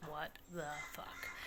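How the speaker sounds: exasperated, slow, soft whisper.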